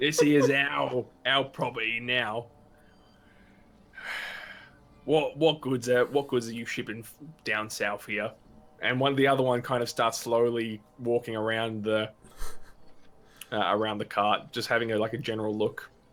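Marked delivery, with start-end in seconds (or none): 0.0-8.3 put-on Scottish bandit accent. Voicing a bandit stopping the traders' cart: put-on bandit accent. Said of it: "this is the best accent I can do".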